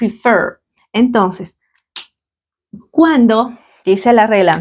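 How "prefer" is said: prefer, with weight on last syllable fer. Explaining that the stress in prefer falls on the last syllable: stress on fer. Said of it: "La entonación está aquí, en fer".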